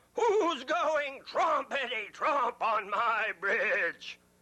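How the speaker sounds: furious troll yelling. Reading a story aloud, the troll on the bridge: furious troll yelling. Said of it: "He yelled".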